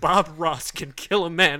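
loud, slow, trembling, devoted delivery. Imitating another speaker's debate closing statement: imitating a trembling voice. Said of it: "He said that with such a tremble".

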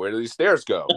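normal talking voice

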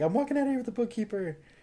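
very high, fast, frantic, panicky outburst. Retelling a movie gunman's threat while holding the bookkeeper hostage: imitating someone freaking out. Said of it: "freaking out, like".

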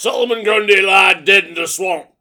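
big, loud, belted cartoon swamp-monster voice. Noting the passing of the actor who voiced the character, doing Jimmy Weldon's Solomon Grundy voice. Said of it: "my Jimmy Weldon as Solomon Grundy impersonation".

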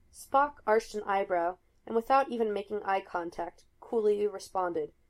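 plain reading voice

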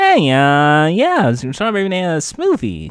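animated, big put-on voice with wide swooping pitch. Doing an impression on request: Jay Leno voice. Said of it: "I prefer your old voice for Jay Leno".

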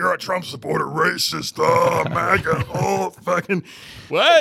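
very loud, slow, high, drawn-out monster bellow. Quoting people who called the speaker a Trump supporter, use a monster voice. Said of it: "That's a great monster voice you have".

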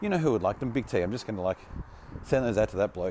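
ordinary talk, nothing marked

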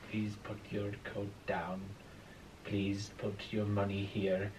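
put-on hushed, very soft, very quiet Swedish accent. Quoting the swedish polygraph examiner's instructions, in a swedish accent. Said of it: "Do the accent".

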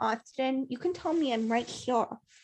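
put-on soft, sugary, cutesy baby talk. Mocking how a woman talks around guys she likes, in a baby voice. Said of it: "start talking like this".

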